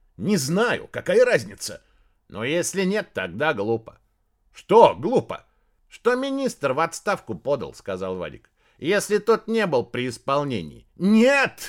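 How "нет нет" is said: loud, high yelled outburst, cried out. Narrator reads a man in a coat breaking into a conversation, shouting. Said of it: "закричал человек в пальто".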